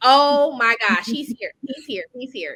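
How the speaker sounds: acted-out laughter while talking through words. Retelling the moment of seeing him arrive with flowers: retelling laughing while talking. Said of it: "I just bust out laughing".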